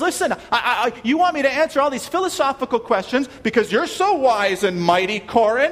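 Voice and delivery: high, loud laughing, mocking and incredulous. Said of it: "And he says".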